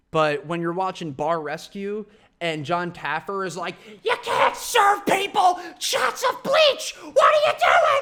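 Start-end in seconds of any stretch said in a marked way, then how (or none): 4.0-8.0 very high, shrill, loud screaming tirade. Describing a Bar Rescue scene with some dude, imitating John Taffer screaming. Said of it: "And screaming at some dude".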